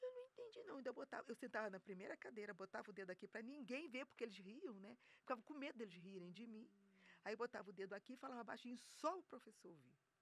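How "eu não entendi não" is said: very high, mewing cat-like voice. Retelling how she spoke in class: imitating own old meowing voice. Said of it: "eu falava desse jeito mesmo".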